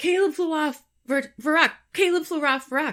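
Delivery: high, loud yell. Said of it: "he yells".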